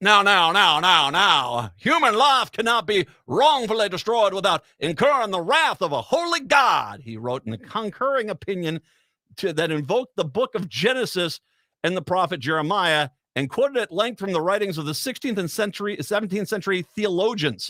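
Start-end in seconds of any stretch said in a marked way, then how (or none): 0.0-7.0 stupidest-sounding exaggerated Alabama accent, overdone. Reading a judge's written opinion aloud, mocking: stupid-sounding Alabama accent. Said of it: "in the most stupid-sounding accent I could possibly do".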